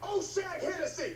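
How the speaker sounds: high, furious shout.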